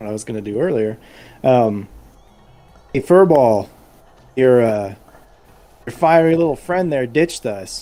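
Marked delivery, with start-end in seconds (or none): 2.9-7.8 loud, fast, projected yell. The speaker's character calls over to Talon: yelling across. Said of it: "I'm gonna yell over to Talon".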